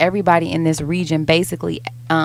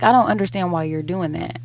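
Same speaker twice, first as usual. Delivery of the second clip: usual speaking voice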